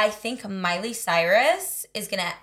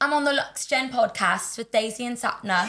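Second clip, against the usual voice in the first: attempted, put-on British accent; 2 semitones higher than usual. Saying a requested podcast intro line on request: best british accent. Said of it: "Do your best British accent".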